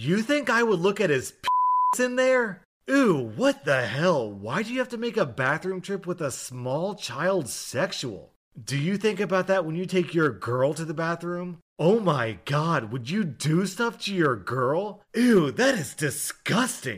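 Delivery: loud, mocking retort tone. Retelling answering a rude woman about a restroom trip: imitating a loud sarcastic retort. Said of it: "very loudly".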